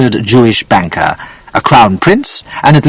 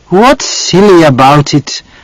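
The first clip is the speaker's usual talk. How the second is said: exasperated tone, pitched up; 5 semitones higher than usual. Reading a mother's reply to her daughter in a story: exasperated voice. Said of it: "Mamma said in an exasperated voice".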